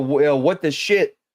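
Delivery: normal talking voice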